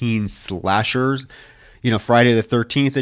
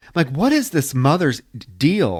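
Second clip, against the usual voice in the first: ordinary delivery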